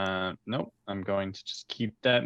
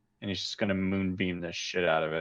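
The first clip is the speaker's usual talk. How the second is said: ordinary talk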